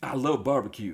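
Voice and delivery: put-on American-accented speech.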